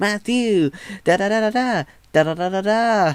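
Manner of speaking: very high, shrill, squeaky put-on voice. Describing their older videos, the speaker imitates their past very high-pitched voice. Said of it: "a very high pitched voice".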